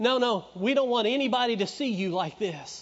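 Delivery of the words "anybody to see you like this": normal talking voice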